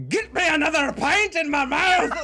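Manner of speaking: hot-tempered Scottish accent. Contrasting Irish and Scottish stereotypes, doing an angry Scottish accent. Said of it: "like it's just like angry".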